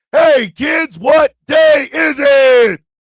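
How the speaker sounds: loud, drawn-out, booming, slow, high cartoon-style call. Opening a segment by calling out to kids: SpongeBob SquarePants intro voice. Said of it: "the beginning of SpongeBob SquarePants when I say that".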